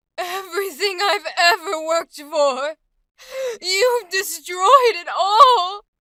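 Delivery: grief-stricken, very loud, slow, drawn-out sorrowful outpouring. Demonstrating emotions on a script line, going full force into sadness, sad. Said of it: "now let's go into sadness".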